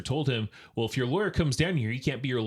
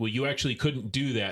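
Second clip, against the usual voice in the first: put-on suddenly irritated, annoyed tone. Retelling the officer's reply after the driver threatens to sue: imitating an officer turning pissy. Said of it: "very shift in tone".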